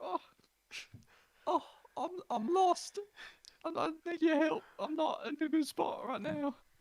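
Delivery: pleading through tears, very high pitch. A player voices Remy answering a stranger in gold armor; tearful Remy. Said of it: "Remy wipes away some tears and he goes".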